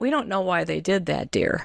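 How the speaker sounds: mock serene, peaceful, unbothered, placid, calm tone. Retelling a teacher's reply in traffic: imitating a placid, calm teacher. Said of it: "And she was so placid".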